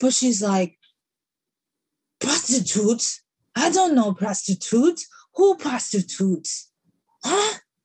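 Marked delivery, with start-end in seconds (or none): 2.2-7.6 put-on Haitian-accented speech. Retelling a woman's line from a YouTube college prank video, attempting a Haitian accent. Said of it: "I'm going to attempt a Haitian accent".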